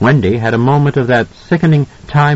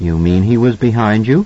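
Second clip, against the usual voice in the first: ordinary delivery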